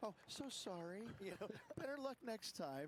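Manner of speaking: high-pitched, sarcastic, mock-sounding delivery. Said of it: "she says it sarcastically".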